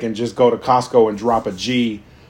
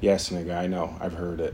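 put-on deadpan, much quieter, lower; 6 semitones lower, 12 dB quieter than usual. Speaker acts out how he would answer people, in a mock deadpan delivery. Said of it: "hit them with the deadpan face and be like".

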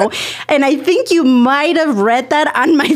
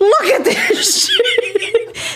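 sudden, loud, high blurted outburst; 8 semitones higher than usual. Speaker recalls to the listener what they once blurted out, retelling a loud blurt. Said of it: "you said it so loud".

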